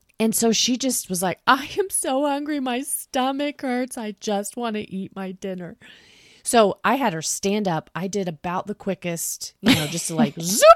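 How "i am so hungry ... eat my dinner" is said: put-on, high, crying, tearful little-kid voice. Speaker acts out what a hungry child said after a long bath; imitating a crying hungry child. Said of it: "so hungry you started crying".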